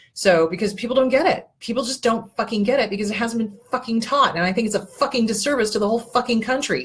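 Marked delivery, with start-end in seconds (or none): 1.6-6.8 fuming, heated angry rant. Complaining that people just don't get it: angry rant. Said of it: "that pisses me off".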